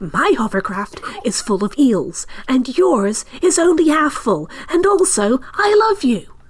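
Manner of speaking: loud, high stage whisper. Speaking in character to another player, in a loud stage whisper. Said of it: "like a stage whisper".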